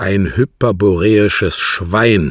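fierce, loud, violent hissed outburst. Reading a character's insult about another man, hissed violently. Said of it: "zischte er heftig".

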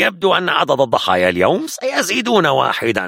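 harsh, severe, high-edged soldier voice. A soldier responds after the stranger names himself, with harshness. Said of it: "قال الجندي بشيء من القسوة".

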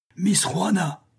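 crying out, high pitch. Amid the raging storm, Harry cries out to Miss Juana. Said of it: "crie Harry".

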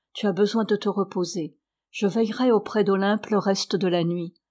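plain

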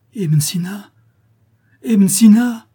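despairing, desperate, drawn-out loud pleading cry. Narrator reads a young man calling to his unmoving master, crying out desperately. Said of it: "Cria le jeune homme d'une voix désespérée".

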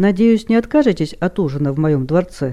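ordinary delivery

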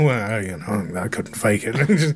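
low, slow, non-committal murmur.

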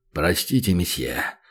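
voice falling a couple tones. The waiter coughs, then speaks to the guest in a suddenly deeper voice. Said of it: "изменился его голос, ставший словно на пару тонов ниже".

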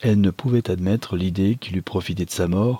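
ordinary delivery

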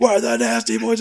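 put-on screaming wrestler voice. Imitating wrestlers screaming a backstage promo: imitating Nasty Boys screaming. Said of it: "they were screaming".

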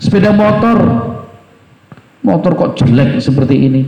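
contemptuous, belittling, scornful, insulting intonation. Acting out someone's demeaning remarks, in a mock-contemptuous insulting tone. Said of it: "Dengan nada dan intonasi menghina".

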